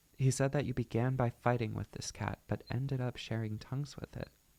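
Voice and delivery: ordinary talk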